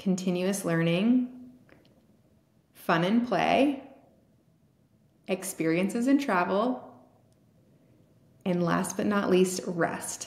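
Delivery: talking slowly. Listing buckets for listeners to write down: talking slowly. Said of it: "so I'm gonna talk slowly".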